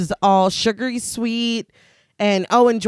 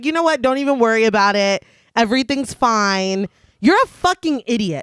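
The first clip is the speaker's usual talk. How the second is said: normal talking voice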